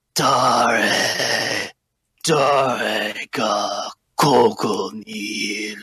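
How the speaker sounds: very slow, rattling skeleton voice. A game master voices a giant skeleton speaking to the players, bone-rattling voice. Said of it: "in a bone rattling voice".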